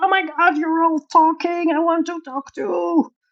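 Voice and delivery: high-pitched put-on bird-like shout. Explaining what the pet bird means with its noise: imitating Binky shouting. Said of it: "it's not chatting, it's shouting".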